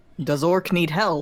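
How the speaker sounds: loud, projected shout. Voicing a character calling out to an orc below: shouting. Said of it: "Rask is gonna shout at the orc".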